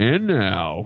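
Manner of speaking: put-on sexy announcer voice. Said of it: "In his sexy announcer voice".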